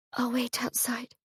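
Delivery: meek, small, very quiet, hushed, high voice. Narrator reading Polly's reply after she is asked to leave, small voice. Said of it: "she says in a small voice".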